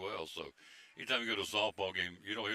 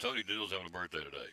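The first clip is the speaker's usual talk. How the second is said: normal talking voice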